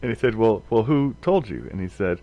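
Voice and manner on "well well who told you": plain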